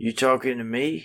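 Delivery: put-on New York accent. Asked to hear his new york impression, the speaker does a new york accent impression. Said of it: "You want to hear my New York impression?".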